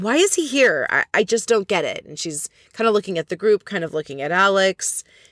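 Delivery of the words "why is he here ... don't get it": put-on blurted complaining outburst, higher. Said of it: "she just blurts out".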